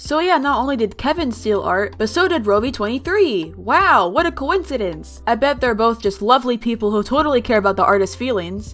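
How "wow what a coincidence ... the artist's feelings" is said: dripping, obvious sarcasm, meaning the opposite. Speaker calling out two creators for stealing art, with obvious sarcasm. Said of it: "That was obviously sarcasm".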